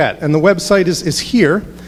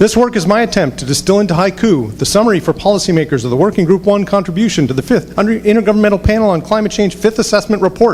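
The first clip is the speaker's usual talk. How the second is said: speed-read, rattled-off, rapid reading; 4 semitones higher than usual. Reading a disclaimer slide for the lawyers aloud: reading really fast. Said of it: "I'll read it really fast".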